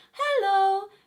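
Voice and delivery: high head-register voice. Showing a voice learner how speaking in head voice sounds: head voice. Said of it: "the head voice is up here".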